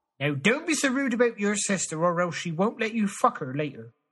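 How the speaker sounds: Cornish accent, pitched high. Ending an accent tour of the United Kingdom, doing the Cornish accent.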